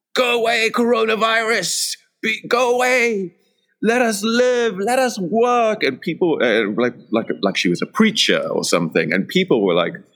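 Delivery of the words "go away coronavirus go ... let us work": very high, slow, drawn-out screaming cry. Recounting a woman leaning out her window, imitating a woman screaming. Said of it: "screaming at the top of her lungs".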